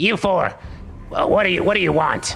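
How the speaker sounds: high-pitched gremlin-style call. Game master voicing the aquatic gremlin shouting at the four of you, in a shouting gremlin voice. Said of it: "he kind of shouts at you".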